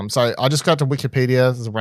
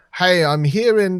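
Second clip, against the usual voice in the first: put-on British accent, pitched higher; 8 semitones higher, 4 dB louder than usual. Retelling how a video creator opened his video: imitating a British accent. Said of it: "with a Br-, British accent, of course".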